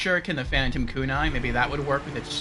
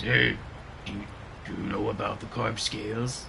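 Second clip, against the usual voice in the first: deep, low voice like a dubbed character; 4 semitones lower, 4 dB quieter than usual. Comparing a character's English and Japanese voices, imitating the deep Japanese dub voice. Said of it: "in Japanese, it's like it's deep".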